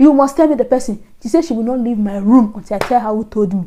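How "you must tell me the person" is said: play-acted shrieking, screaming and insistent. Retelling what she demanded about who told the speaker: imitating her screaming. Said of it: "she was screaming".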